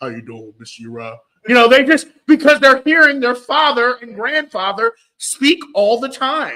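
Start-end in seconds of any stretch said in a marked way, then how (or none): 0.0-1.2 put-on deep toddler voice, much lower, quieter. Describing toddlers copying their fathers' voices; imitating a toddler's deep voice. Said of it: "So they speak with a deep voice".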